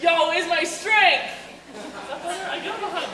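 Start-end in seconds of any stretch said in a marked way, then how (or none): 0.0-1.2 projected, heartfelt, more feeling. Asked again for more feeling, projecting out to the room: more feeling, projected out. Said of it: "a little bit more feeling".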